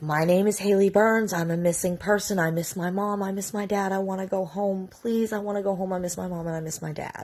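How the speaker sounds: put-on voice breaking down in tears. Retelling a missing person's words to an officer: imitating someone breaking down in tears. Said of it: "she broke down".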